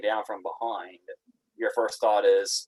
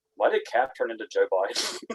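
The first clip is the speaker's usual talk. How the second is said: mock bone-dry, flat, expressionless, deadpan delivery. Retelling how a guy in a video reacted to a picture of old cap: mimicking a deadpan delivery. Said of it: "just really deadpan, this guy just goes".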